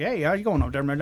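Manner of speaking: put-on Texas twang. Retelling how visiting Texas family brings out twanging: Boomhauer twang impression. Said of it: "I sound like Boomhauer".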